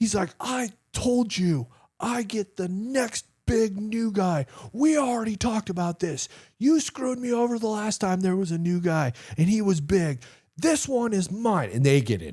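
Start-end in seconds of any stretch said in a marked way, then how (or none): 0.4-11.7 mock, very high, furious angry yelling. Retelling two men arguing in a hallway: imitating someone screaming angrily. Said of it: "they're just screaming".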